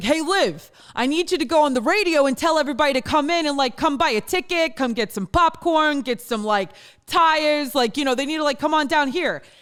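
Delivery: Italian New Jersey dad voice. Imitating her dad giving her a request, in an Italian New Jersey accent. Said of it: "I impersonate my father because he's Italian and Jersey".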